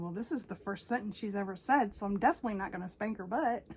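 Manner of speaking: ordinary delivery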